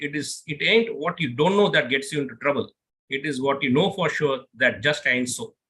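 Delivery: ordinary talk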